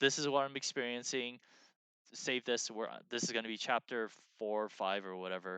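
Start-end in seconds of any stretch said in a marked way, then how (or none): none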